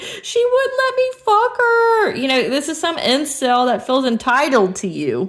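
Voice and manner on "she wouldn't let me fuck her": tearful, whimpering, crying moan, pitched way up. Mocking an entitled incel's complaint, mock crying whine. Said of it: "crying like that".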